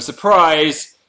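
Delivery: high, loud, mock-surprised exclamation. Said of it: "you can just go".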